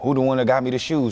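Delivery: ordinary delivery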